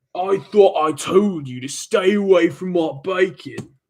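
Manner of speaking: furious British tough-guy accent, angry. Playing the iconic angry british thug in a comic bit, angry british thug voice. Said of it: "the iconic British thug. He goes".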